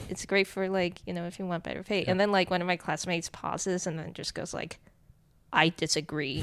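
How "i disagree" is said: put-on very serious voice, louder. Retelling a classmate's reply in class, imitating a really serious voice. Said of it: "in this really, really, really serious voice".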